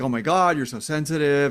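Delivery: ordinary delivery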